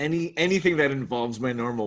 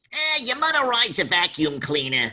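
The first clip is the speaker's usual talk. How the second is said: pitched-up cartoon voice swinging pitch widely; 8 semitones higher, 4 dB louder than usual. Recalling the audition line that got the Bugs Bunny voice right: Bugs Bunny voice. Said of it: "got me into the most kind of zone for Bugs".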